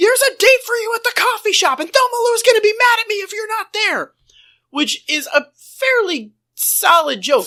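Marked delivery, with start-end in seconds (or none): 0.0-4.1 frantic, very high, panicked shrieking yell. Retelling a TV scene where a character panics: imitating a panicked yell. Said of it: "he panics and just yells".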